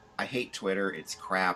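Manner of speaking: normal talking voice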